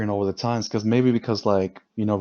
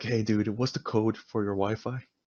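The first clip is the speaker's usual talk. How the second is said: put-on casual, bored demon voice, quieter; 8 dB quieter than usual. Joking about a demon asking for the Wi-Fi code, imitating a casual demon. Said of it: "he's like".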